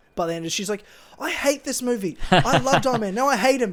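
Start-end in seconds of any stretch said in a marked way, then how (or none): 1.2-3.7 exasperated, loud, pitched-up angry ranting. Retelling mum's reaction to the movie: imitating mum's angry rant. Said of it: "she fucking hated Iron Man".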